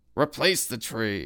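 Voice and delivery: derisive, scornful scoff. Louis, a real estate appraiser, reacts to the arborists' consultation; scoffing. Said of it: "Louis scoffed".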